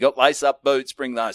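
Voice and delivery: ordinary talk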